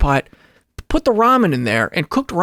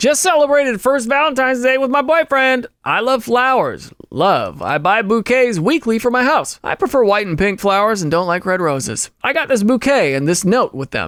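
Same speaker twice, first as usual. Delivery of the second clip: ordinary talk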